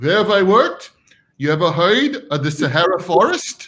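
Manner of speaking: put-on little elderly old grandpa voice.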